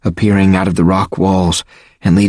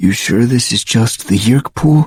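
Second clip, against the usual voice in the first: trembling, uneasy, nervous, shaky voice; 3 semitones higher than usual. Reading a story aloud, a boy asks about the pool: nervous shaky voice. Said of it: "in a nervous, shaky voice".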